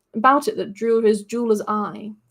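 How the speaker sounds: ordinary delivery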